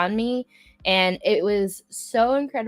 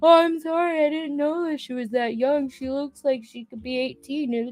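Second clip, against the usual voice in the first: put-on drunk man voice, higher pitch; 7 semitones higher than usual. Retelling what a still-drunk guy said after he messed up, imitating a drunk man. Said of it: "you can tell he's still three sheets".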